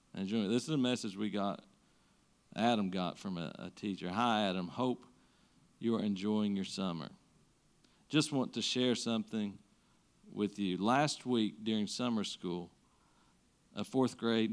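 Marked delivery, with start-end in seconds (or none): 4.1-14.6 choked-up, tearful reading-aloud voice. Reading aloud a teacher's message about a student, crying while reading aloud. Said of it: "I can't read it".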